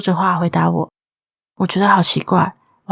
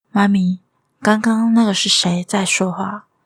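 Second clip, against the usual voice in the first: put-on timid voice. Mother retelling her younger daughter's question to her, imitating a timid question. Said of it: "则是怯怯地问着我".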